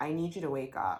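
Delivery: normal talking voice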